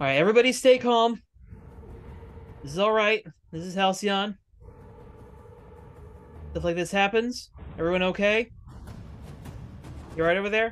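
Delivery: commanding leader voice. Voicing a player character calming a crowd: commanding team-captain voice. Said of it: "command the team voice he can muster".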